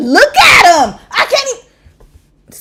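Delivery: loud, drawn-out, fired-up angry yell. Reacting to a dating story in front of viewers: yelling angrily. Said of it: "sorry, y'all, I'm yelling too much".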